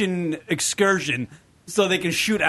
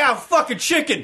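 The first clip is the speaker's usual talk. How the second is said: blunt, cartoonish alligator character voice; 7 semitones higher, 3 dB louder than usual. Acting out an alligator going after a chicken: voicing an alligator. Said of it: "And he's just like".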